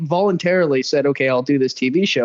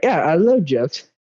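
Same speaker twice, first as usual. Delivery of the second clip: imitated female voice. Retelling a dating show conversation, imitating a woman from the show. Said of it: "You don't have to do the voice".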